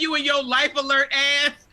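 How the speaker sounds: ordinary delivery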